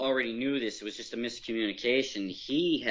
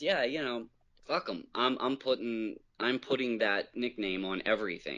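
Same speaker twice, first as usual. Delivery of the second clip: normal talking voice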